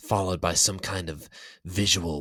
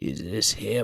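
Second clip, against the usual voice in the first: put-on aged, elderly, quivering, trembling, quavering voice; 3 semitones higher than usual. Someone unseen in the room asks about a hooded captive: old, quivering voice. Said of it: "came an old and quivering voice".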